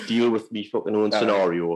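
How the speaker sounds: ordinary talk, nothing marked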